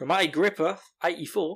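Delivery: put-on Australian accent. Podcast host reading a reviewer's username aloud, in an Australian accent. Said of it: "I've got to say that with an Australian accent".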